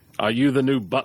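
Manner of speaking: acted old person voice. Trying out voices for a reference, asking about a new butler: sounding like Patrick Stewart. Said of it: "Now you sound like Patrick Stewart".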